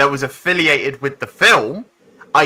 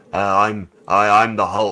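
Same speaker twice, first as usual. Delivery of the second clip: flat monotone put-on voice, lower; 6 semitones lower than usual. Mocking the film version of the Hulk: Hulk voice in monotone. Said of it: "I talk in a monotone".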